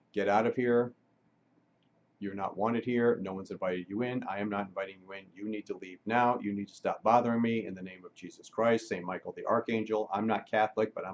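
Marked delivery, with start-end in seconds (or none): none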